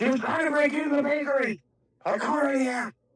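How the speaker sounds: very high, shouted words. Shouting back to a stranger who asks what is going on: yelling over the shoulder. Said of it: "Kinda yell over my shoulder".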